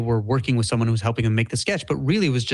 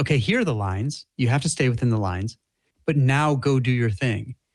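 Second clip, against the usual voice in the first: normal talking voice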